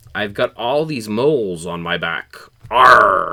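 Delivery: loud put-on pirate voice, Arr stretched. Telling a joke, voicing the pirate's punchline: put-on pirate voice. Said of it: "A pirate goes to the doctor and says".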